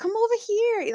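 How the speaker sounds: put-on failed Spanish accent, pitched way up. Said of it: "I can't do a Spanish accent".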